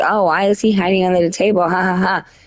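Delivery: scornful, mocking jeer with ha-ha laughter. Retelling how a girl in a live chat laughed at someone hiding: imitating a girl laughing mockingly. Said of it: "this girl that was battling him was laughing and like".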